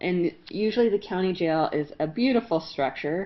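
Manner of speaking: usual speaking voice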